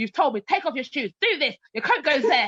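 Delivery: bossy, sing-song teacher voice. Quoting what someone said when they walked into your home, telling them what to do; bossy, imitating a teacher voice. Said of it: "I am using teacher voice".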